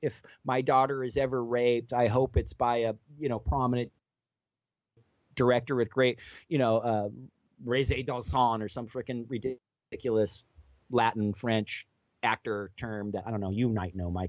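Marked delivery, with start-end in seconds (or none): none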